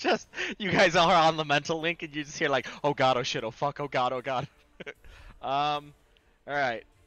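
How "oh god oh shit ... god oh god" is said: in a panic, frantic. Telling the players what they hear over the mental link, panicked. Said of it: "You hear just panic".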